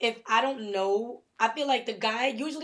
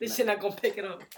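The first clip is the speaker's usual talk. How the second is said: normal talking voice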